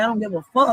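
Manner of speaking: plain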